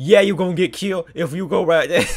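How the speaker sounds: very loud, high, goofy, silly put-on voice. Playing a game from a vantage point, answering the enemies, doing a voice. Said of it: "I don't know why I'm doing that voice".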